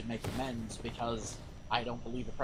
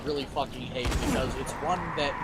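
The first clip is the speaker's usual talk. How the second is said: plain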